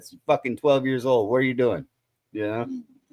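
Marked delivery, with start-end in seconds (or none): 0.1-1.8 furious, angry voice. Retelling what a father said about his twelve-year-old smoking: imitating an angry father. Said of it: "my fucking old man would be hot pissed".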